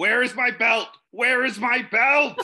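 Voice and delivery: play-acted high yelling. A player's character runs into a burning building, yelling. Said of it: "I'm yelling".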